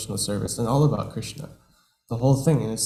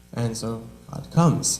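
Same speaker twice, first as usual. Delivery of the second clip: usual speaking voice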